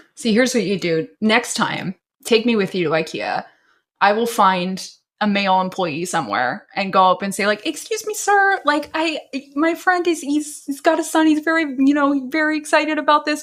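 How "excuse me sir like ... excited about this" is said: high-pitched put-on girl voice. Acting out asking an employee for a photo: put-on high-pitched girl voice. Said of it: "in a kind of high-pitched girl voice".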